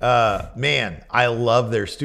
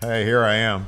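playful, put-on southern American accent; 2 semitones lower, 4 dB quieter than usual. Trying out different voices, put-on southern accent. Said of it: "Or I can do a southern accent".

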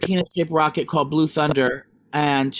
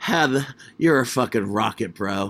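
put-on man's voice, much lower; 6 semitones lower than usual. Retelling what a man said to Heather, the speaker does his voice. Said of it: "I'm looking at you and like in disbelief".

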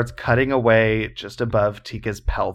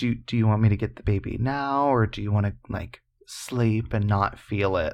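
imitated mock-caring voice; 3 dB quieter than usual. Retelling what a woman said in a story; imitating a caring voice. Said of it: "said that in like a caring voice".

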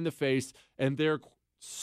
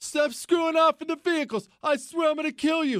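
put-on shrill, furious, high-pitched screaming; 12 semitones higher, 3 dB louder than usual. Retelling how a gunny screamed at the speaker, imitating someone screaming. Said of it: "he's screaming at me and throwing stuff".

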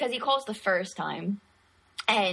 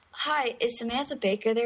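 ordinary delivery

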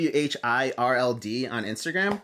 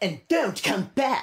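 nasty, cutting, mean tone, pitched up; 7 semitones higher than usual. Performing a requested line three times, the second half: mean and loud. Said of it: "and then mean and loud for the second half".

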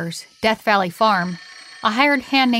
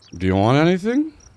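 put-on drunken, slurred speech, lower pitch; 5 semitones lower than usual. Playing a stranger approaching a man in a farmyard, slurring words like a drunk. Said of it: "slurring his words like he's drunk".

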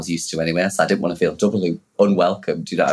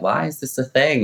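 put-on excited screaming, higher; 7 semitones higher than usual. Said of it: "I remember just screaming 'cause I was like".

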